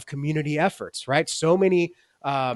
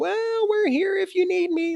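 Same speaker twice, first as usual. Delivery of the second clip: put-on very high, squeaky little child voice. Speaker criticizing the church for letting itself be sidelined: squeaky little kid voice. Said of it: "little squeaky voice kid".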